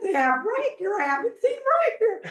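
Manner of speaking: put-on high, astonished elderly voice. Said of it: "he's like".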